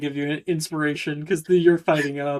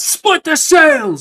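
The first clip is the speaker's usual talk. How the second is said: very high, loud shouted pirate voice; 11 semitones higher, 9 dB louder than usual. Voicing a ship captain ordering his men to board: pirate captain yelling orders. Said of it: "he's yelling off".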